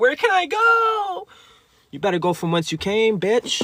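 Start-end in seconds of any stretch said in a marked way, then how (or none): 0.0-1.3 put-on very high, slow, drawn-out pig-like squealing wail. Describing energies with nowhere to abide: mock screaming like burning pigs. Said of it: "They screaming like pigs burning".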